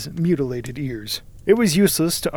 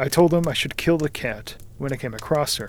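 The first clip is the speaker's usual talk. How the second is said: ordinary delivery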